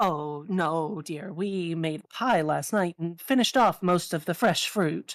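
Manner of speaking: resonant, rounded, sonorous gnome voice. Voicing a gnome who answers Taz's request for apples, in a low sonorous gnome voice. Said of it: "with a surprisingly like low and sonorous voice for a gnome".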